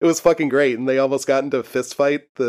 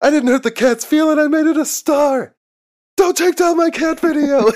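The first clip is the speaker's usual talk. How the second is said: put-on very high, unhinged, maniac screaming rant; 5 dB louder than usual. Retelling a podcast host's rant about a removed cat video: imitating someone screaming. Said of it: "screaming about it into the microphone".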